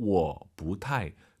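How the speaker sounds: 我 low, drawn out. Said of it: "절대 워를 안 올리시잖아요".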